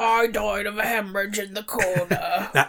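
put-on elderly British man voice. Playing a 72-year-old British man named Bill Wilkins, elderly British voice. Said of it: "starts talking like an elderly British man".

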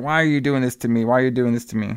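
ordinary talk

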